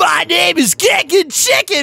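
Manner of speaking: high, screamy character voice. Recalling what a character said, imitating Kickin Chicken screaming. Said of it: "He was like screaming".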